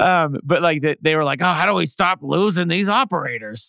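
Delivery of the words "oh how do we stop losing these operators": put-on old-timey 1950s voice, higher. Acting out how people in the 1950s talked, old-timey 1950s way of talking. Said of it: "That's how they talked then".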